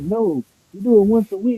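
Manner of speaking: all shocked, taken aback, high-pitched. Retelling a video clip's surprised reply about washing: imitating a shocked reply. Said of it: "all shocked".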